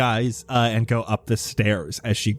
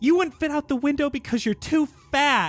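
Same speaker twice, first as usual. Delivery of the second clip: very high, shrill, screaming, taunting tone. Voicing a character grabbed by a player, screaming an insult: screaming insult. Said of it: "She screams as you grab her, and she says".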